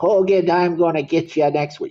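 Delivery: put-on New York, New Jersey accent. Showing how a line should sound, with a New Jersey, New York accent. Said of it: "you got to get a little bit of that New Jersey, New York accent in there, like".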